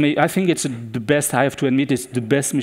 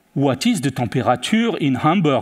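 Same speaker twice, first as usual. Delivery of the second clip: heavy put-on French accent. Pretending to be a French tourist doing a voice search, thick French accent. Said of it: "I used a very thick French accent".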